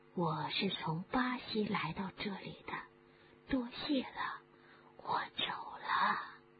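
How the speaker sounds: gentle, soft, hissed snake whisper. Narrator reads the snake's words to Harry as it slides past: soft hissing snake voice. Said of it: "一个嘶嘶的声音，轻轻的说".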